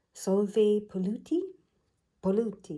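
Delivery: put-on Italian accent. Reading an oracle card aloud: Italian accent. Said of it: "should be said with an Italian accent".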